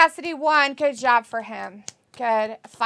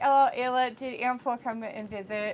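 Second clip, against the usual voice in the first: plain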